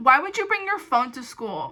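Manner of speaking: patronizing, super condescending, talking-down tone. Retelling what an office lady asked a student, imitating a condescending tone. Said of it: "super condescending".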